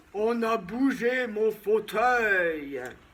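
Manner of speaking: hefty, big, deep, exclaiming papa bear voice. Narrator reads Papa Bear's exclamation in a fairy tale: Papa Bear's big voice. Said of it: "s'exclama papa ours de sa grosse voix".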